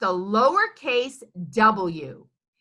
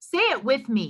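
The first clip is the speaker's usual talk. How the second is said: ordinary talk, nothing marked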